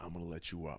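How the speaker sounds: put-on whisper. Retelling whispering in a held man's ear: retelling a whisper. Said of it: "I whispered something in his ear".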